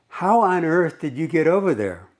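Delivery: bewildered, mystified call, kept mild. Reading out a scene of a man calling across busy traffic: imitating a man yelling. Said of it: "He yells at the top of his lungs".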